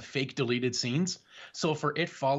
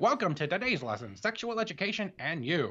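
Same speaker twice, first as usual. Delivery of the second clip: put-on old fifties announcer voice; 3 semitones higher than usual. Showing the voice from a skit: old fifties style voice. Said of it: "an old fifties style voice".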